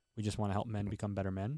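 plain

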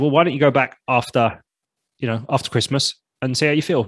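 ordinary delivery

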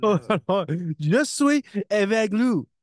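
gasping, breathless, laughing helplessly. Repeating what he hears, laughing too hard to breathe. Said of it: "I can't breathe".

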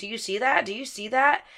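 hushed, frantic, alarmed, panicked urgent voice. Retelling a phone call with mom, the speaker is imitating mom's panic. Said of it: "like in a panicked voice".

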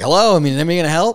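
play-acted, loud, high joking call-out. Speaker retells a companion jokingly trying to get staff attention; retelling a joking hello. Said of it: "he starts like kind of like jokingly like".

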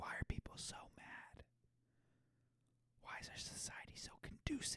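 hushed, breathy whisper under the breath. Speaker explaining why they study sociology, whispering. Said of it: "Why am I whispering?".

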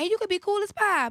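real country-sounding voice. Describing someone you stop trusting, with a country-sounding voice. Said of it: "you sound real country when you said it".

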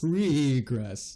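put-on spooky, eerie ghost voice. Co-host agreeing about a running back's prospects: spooky ghost voice. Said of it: "I don't know why I said it like a spooky ghost".

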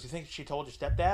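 ordinary talk, nothing marked

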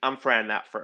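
mock very stern, firm, no-nonsense tone. Retelling an awkward award moment, imitating a stern correction. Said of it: "in a very stern way".

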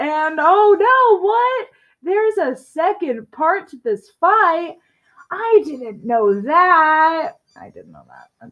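high, swooping, heavily sarcastic feigned shock. Player reacts to a boss fight having a second part: sarcastic. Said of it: "That's sarcasm".

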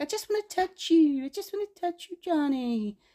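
high, non-breathy voice.

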